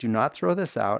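usual speaking voice

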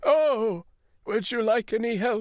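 high-pitched creature voice. Voicing Genghis Kringus asking a searching player: Genghis Kringus voice. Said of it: "Genghis Kringus squats down next to you and says".

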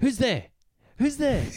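acted very high, frightened little shouting voice. Describing a scene where coconuts fall from trees, retelling a scared shout. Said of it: "he's scared and he's shouting out".

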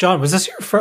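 voice cracking. Asking another speaker a question about comic issues: voice cracking. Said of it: "oh my God, my voice cracked".

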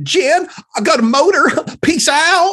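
put-on shrill, high, loud teen girl voice. Taking the phone from his daughter, a father talks into it, imitating Abby. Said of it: "imitating Abby".

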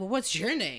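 put-on entitled tone. Retelling how a man asked the speaker's name, mimicking an entitled tone. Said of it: "In the most like entitled tone".

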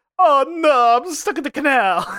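very high, slow put-on Italian accent. Voicing people stuck on a long gondola in a canal, in a put-on italian voice. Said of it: "moratorium on Italian voice".

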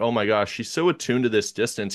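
ordinary talk

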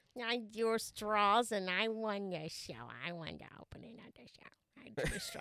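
nasal secretary-like voice. Host opens tonight's show and greets co-host, nasally secretary voice. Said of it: "You sounded like a nasally secretary".

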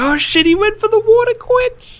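high, loud excited yell.

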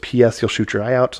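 ordinary talk

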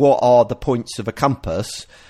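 normal talking voice

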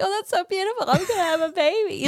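acted high, teary gushing, as if near tears. Retelling how diaper commercials made her cry, in mock-tearful gushing. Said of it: "diaper commercials were literally making me cry".

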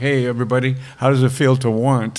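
mock smug gloating tone. Retelling walking out of a rock concert, ears ringing: imitating own smug gloating. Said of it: "being smug".

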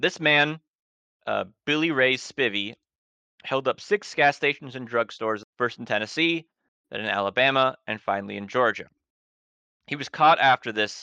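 usual speaking voice

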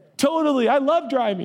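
put-on very high, panicky, flustered blurt. Retelling replying to a bishop about driving: imitating own panicked reply. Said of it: "but I panic and I say that".

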